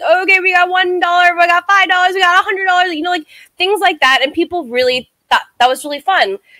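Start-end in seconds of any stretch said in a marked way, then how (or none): 0.0-2.9 mock auctioneer voice, pitched much higher. Retelling running an auction of a painting, in an auctioneer voice. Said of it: "I put on my best auctioneer voice".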